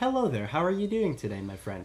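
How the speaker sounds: overly polite, almost synthetic, very proper swooping sing-song. Imitating a very proper acquaintance's greeting: imitating Zeke, very proper. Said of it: "he's so proper".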